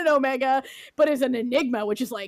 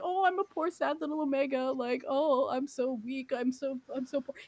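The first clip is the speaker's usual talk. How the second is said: soft, fake pitiful voice of helpless self-pity; 8 dB quieter than usual. Retelling how one character acts toward another, mocking fake self-pity. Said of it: "being like".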